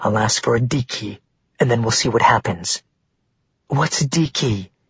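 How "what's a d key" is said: barely above a hushed half-whisper. Narrator voicing a woman's question to her companions: barely more than a half-whisper. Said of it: "her tone barely more than a whisper".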